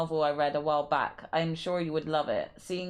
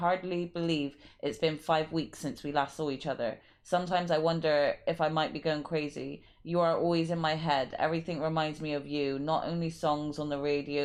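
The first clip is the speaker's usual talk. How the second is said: usual speaking voice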